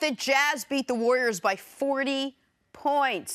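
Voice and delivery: slow drawn-out emphasis. Announcing last night's result, said slowly for emphasis. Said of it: "I have to say it slowly like that".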